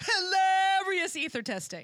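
loud, high, excited all-caps delivery. Speaker reads out an all-caps message in Julie's all-caps voice. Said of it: "I'm going to say this in Julie's voice cuz it's all caps".

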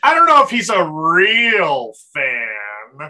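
loud snooty scoff, "fan" drawn out. A host introducing a guest does an internet gatekeeper impression. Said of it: "That was my impression of a internet gatekeeper".

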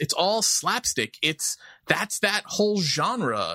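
ordinary delivery

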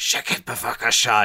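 mumbling under breath. Acting out a pitched classroom scene as David: mumbling under his breath. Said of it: "David just mumbles un-, under his breath".

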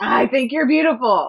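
furious, very loud outburst. Showing how they say something when frustrated, in a really angry voice. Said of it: "in a really angry voice".

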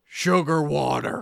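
rough, creaky backwoods hillbilly farmer voice. Describing a character he wanted to write, hillbilly farmer voice. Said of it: "this hillbilly farmer type".

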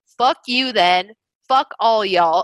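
plain

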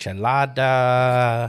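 slow, exaggerated fake Mexican accent.

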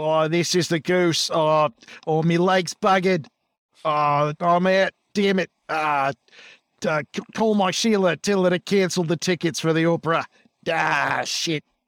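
put-on injured motorcycle cop voice. Acting out a hurt motorcycle cop calling on his radio: voicing Goose on the radio. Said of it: "he fumbles for the radio on his motorcycle".

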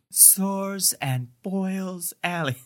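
slow, sad, distraught, mournful drawn-out delivery. Recapping a TV episode, speaker quotes a distraught character's line, doing Michel's sad delivery. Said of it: "Just the way he sadly says the street name".

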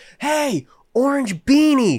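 very high yelled call-out. Telling a story, the speaker repeats what the guy next to them screamed: retelling a scream. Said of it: "he screams".

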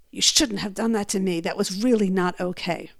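muttering under breath. Retelling what the husband said at the event: imitating someone muttering under breath. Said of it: "under his breath".

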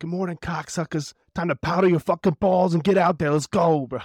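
put-on loud, thick, laid-on New York accent. Describing a Joey Diaz motivation video: Joey Diaz New York accent. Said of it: "he got that thick New York accent".

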